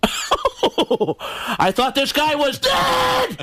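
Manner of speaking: high, drawn-out exclamation, every word stretched, pitch swooping. Recalling a voice many people remember from the show, Sam Kinison voice. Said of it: "I do the voice of Sam Kinison".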